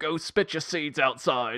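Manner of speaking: loud, put-on Cockney accent. Retelling a story in which Michael Caine speaks: Michael Caine Cockney voice. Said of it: "I'm just gonna keep doing this Cockney voice".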